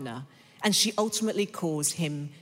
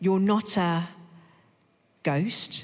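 trembling, shaky, fearful voice; 2 semitones higher than usual. Narrator reads Susan asking Aslan if he is a ghost, shaky voice. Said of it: "Susan said in a shaky voice".

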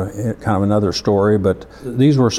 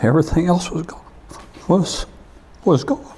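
overcome with feeling, voice rising high; 8 semitones higher than usual. Quoting what he said about losing everything, the speaker gets emotional. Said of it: "Sorry, I get emotional".

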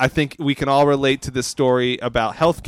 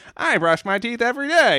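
bad put-on nerdy sitcom voice, higher; 10 semitones higher than usual. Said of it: "that's a terrible Steve Urkel, uh, impression".

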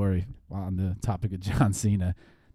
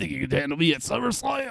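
put-on high, creaky, weird old-man voice; 9 semitones higher than usual. Mocking the voiceover for a wrestler in a video game: imitating an old weird guy voice. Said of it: "The guy literally sounds like".

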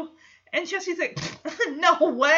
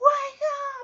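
mock very high, shrill scream, up close; 11 semitones higher than usual. Speaker retells a man waking a sleeping companion, retelling a scream. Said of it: "Jesse just screams in his face".

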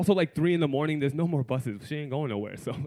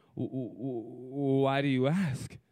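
quieter, put-on stammering; 4 dB quieter than usual. Retelling own answer to a sudden question: imitating own past stutter. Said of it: "if I'm stuttering".

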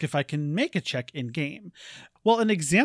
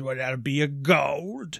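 smug, oily tavern keeper voice; 2 semitones lower than usual. Narrating the game, voicing the human barkeep to your group, smarmy barkeep voice. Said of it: "this smarmy human barkeep says".

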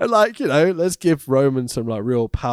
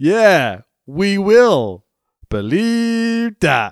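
loud, slow, high-pitched, drawn-out delivery; 5 semitones higher, 5 dB louder than usual. Retelling a wrestling show backstage scene: imitating Roman Reigns. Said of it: "Roman goes".

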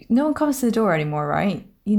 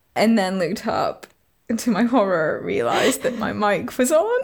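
ordinary talk, nothing marked

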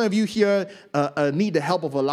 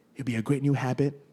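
normal talking voice

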